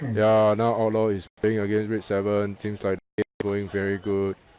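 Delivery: deadpan, unexcited, low, flat monotone commentator delivery. Imitating a man who never raises or softens his voice: flat monotone. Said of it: "He's just monotone".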